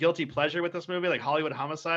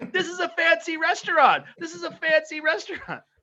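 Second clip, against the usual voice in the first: very high-pitched acted yell; 12 semitones higher, 4 dB louder than usual. Retelling a movie scene of throwing fish at people: imitating Tom Green yelling. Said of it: "he's yelling".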